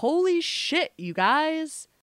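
very high, loud, drawn-out yell. Retelling waking up and seeing a sports alert on the phone: re-enacting yelling out loud. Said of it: "I yelled out loud".

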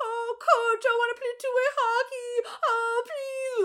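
wailing fake-crying whine, very high and slow. Recounting a scene, the speaker mimics Russ teasing Charlie: Russ's mock crying plea. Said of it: "Like crying".

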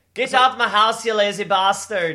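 booming, very loud shouted put-on Scottish accent. Putting on a voice that another speaker then calls Scottish, in a Scottish accent. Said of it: "wait, that was Scottish".

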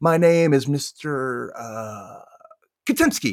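slow speech with long pauses. Retelling a student's impression of a teacher with long pauses: imitating Mr. Katimski's long pauses. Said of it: "he does a pretty spot-on impression of him".

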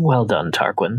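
incredibly begrudging, reluctant tone. Voicing a character congratulating Tarquin: incredibly begrudging. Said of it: "with incredible begrudgingness will say".

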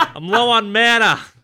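put-on heavy South Boston accent, laid on thick. In a fantasy game, a character speaks in a thick Southie Boston accent. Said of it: "speak with that thick, Southie accent".

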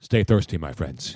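deep, low commercial pitchman voice impression. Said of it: "Maximilian Schell was the guy who said".

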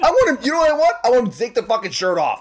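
intense, emphatic delivery. Speaker in a group conversation, yelling. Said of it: "I'm yelling".

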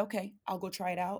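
ordinary talk, nothing marked

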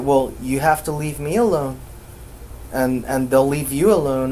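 ordinary talk, nothing marked

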